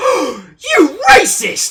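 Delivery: very loud, very high, shrill sing-song call. Retelling how they end a talk with a coworker in an open-plan office: loud high-pitched voice. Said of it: "saying in a loud, high pitched voice".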